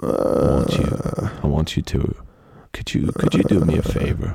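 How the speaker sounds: very low, soft ASMR voice. Speaker asks a listener for a favor, ASMR voice. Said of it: "How do you like the ASMR version".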